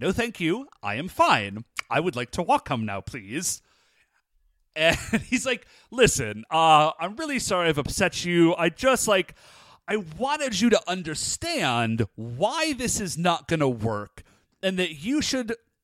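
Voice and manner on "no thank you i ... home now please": put-on excessive politeness. Recapping a scene where a man offers a woman a ride; imitating hyper-polite tone. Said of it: "But she just gets, like, hyper polite".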